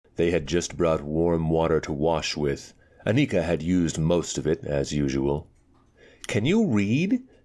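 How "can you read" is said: very high-pitched, insistent, demanding voice. Pulling off her last petticoat, a woman questions the narrator: demanding. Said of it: "She demanded through the final petticoat".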